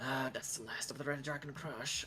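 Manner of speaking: muttering under the breath. Voicing the barkeep to the party, muttering under his breath. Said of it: "under his breath".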